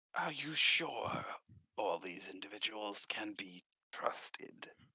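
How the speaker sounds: put-on whispered voice. Voicing a figure who pulls a player close: whispering in character. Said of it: "he whispers in your ear".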